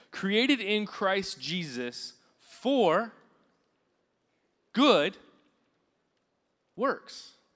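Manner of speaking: slow, deliberate, halting word-by-word reading. Speaker reads a bible verse aloud to listeners, reading slowly. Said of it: "I'm reading this slowly".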